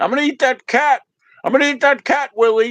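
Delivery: high, threatening, pitched-way-up puppet voice. Imitating Alf threatening the cat to the parents: Alf voice. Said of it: "how Alf is always like to the parents".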